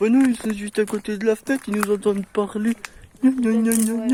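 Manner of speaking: high, loud, mocking whining voice.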